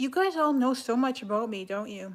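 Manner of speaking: mocking, sarcastic tone. Talking to viewers about their comments on the speaker, sarcastic. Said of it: "I'm being sarcastic".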